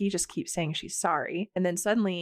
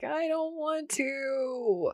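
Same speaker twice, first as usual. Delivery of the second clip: mock, very slow, high, drawn-out whiny child's wail; 8 semitones higher than usual. Retelling a scene, quoting a woman refusing to go home: imitating childlike wailing. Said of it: "Nikki starts wailing like a child".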